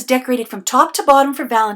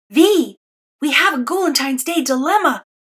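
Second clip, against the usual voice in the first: loud stage whisper; 3 semitones higher than usual. Narrating a story, Demi suddenly appears to warn V: loud whisper. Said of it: "he whispers loudly".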